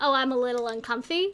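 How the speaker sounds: ordinary talk, nothing marked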